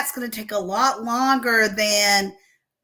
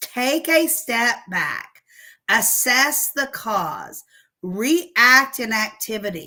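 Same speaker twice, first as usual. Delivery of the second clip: slow, deliberate, unhurried, spaced-out delivery. Host repeats advice so listeners really think about it, speaking slowly. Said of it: "I'm saying it slowly".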